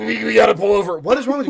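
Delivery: very high-pitched, loud, shrill screaming. Retelling a sick car ride, the speaker relives yelling at him, reenacting screaming at someone. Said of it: "I'm just like screaming at him".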